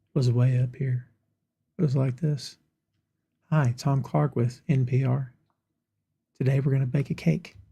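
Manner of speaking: very chill, soft, subdued, laid-back radio-style delivery. Host demonstrates his original podcasting intro, imitating a subdued, laid-back voice. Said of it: "Very subdued, very laid back, very chill".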